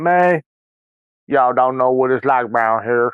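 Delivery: fake, pretend Southern accent. Speaker recalls coming back as a kid from a month in Alabama and Florida: fake Southern accent. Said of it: "pretending that I I caught the accent".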